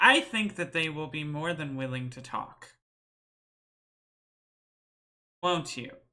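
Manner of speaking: severe, stern, no-nonsense, unbending voice. Speaking as Althea to the captives, telling them they'll talk: stern Althea. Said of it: "stern look and says".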